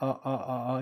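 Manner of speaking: "ah-ah-ah" broken by glottal stops, choppy. Voice lesson showing a closed throat cutting off sound: choppy ah. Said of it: "목을 닫아서 소리를 끊어 주는 거죠".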